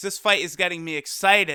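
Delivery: plain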